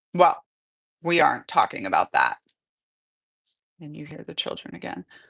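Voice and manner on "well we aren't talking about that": flat, cold, dismissive, lower pitch. A father answers his teenage child's accusation, flat, cold, dismissive. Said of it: "The f- reply comes flat, cold, dismissive".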